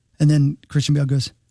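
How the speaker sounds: ordinary talk, nothing marked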